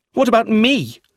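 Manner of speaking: very high, trembling outburst, shaking with violent emotion. Eustace hears his father left him nothing, shaking with violent emotion. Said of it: "Eustace was shaking with violent emotion".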